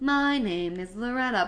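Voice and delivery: very slow, flat, computer-like voice. Discussing an actress's voice in a scene, quoting her; flat computer voice as Loretta. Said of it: "a flat computer voice".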